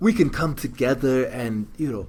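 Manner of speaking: put-on South African voice. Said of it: "That's your South African voice?".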